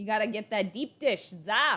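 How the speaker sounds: Chicago accent slipping into Jersey accent. Trying out accents, the speaker attempts Chicago: attempted Chicago accent. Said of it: "I don't know if I can do a Chicago accent".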